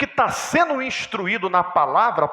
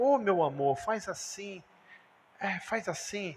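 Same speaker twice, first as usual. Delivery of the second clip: mock tender, hushed, soft, slow, affectionate coaxing; 10 dB quieter than usual. Describing how some people give instructions more affectionately: mock-affectionate tone. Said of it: "Tem uns que são mais carinhosos".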